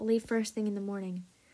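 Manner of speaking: ordinary talk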